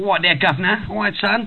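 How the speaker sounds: high-pitched Cockney accent.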